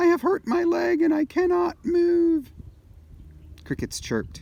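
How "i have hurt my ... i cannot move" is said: very high, pitiful, sad cry of a hurt calf. Narrator reads the robot mimicking a calf at night, in a sad wounded-calf voice. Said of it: "in the sad voice of a wounded calf".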